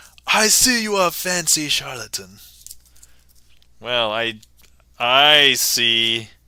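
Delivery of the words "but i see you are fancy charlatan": tentative, unsure put-on British accent, pitched up. Streamer reading a chat message aloud, attempting a British accent. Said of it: "I need to read this like with a British accent".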